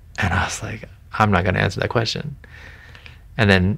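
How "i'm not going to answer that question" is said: normal talking voice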